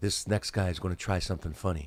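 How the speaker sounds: mock foreboding, ominous announcer delivery. Retelling how an introducer announced the next comedian: imitating a warning voice. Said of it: "that kind of voice, like it was a warning".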